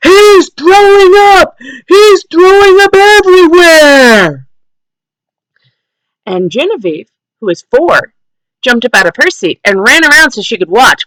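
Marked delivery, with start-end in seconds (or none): 0.0-4.5 mock, very high, drawn-out, carrying, extra-loud holler. Telling a restaurant story, the speaker quotes him, retelling an extra-loud shout. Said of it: "in his extra loud voice".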